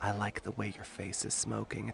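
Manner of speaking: whispered, very close. A woman slips her arms around your neck, whispering in your ear. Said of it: "whispers in your ear".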